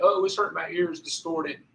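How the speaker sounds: mocking, whiny, high, drawn-out voice. Explaining how to use the mic filter, imitating people complaining: imitating people complaining.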